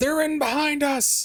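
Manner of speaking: panicked screaming. Voicing humans bursting through a door: screaming in panic. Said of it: "the humans are screaming".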